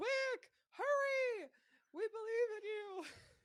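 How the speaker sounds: high, loud encouraging yell. Voicing the group across the rope cheering someone on: yelling encouragement. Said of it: "everybody on the other side is yelling".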